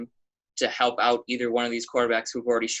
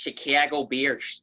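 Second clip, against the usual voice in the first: Chicago-accented speech; 3 semitones higher than usual. Introducing the next team on a show, prompted by another speaker, in a chicago accent. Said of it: "gotta get your Chicago accent".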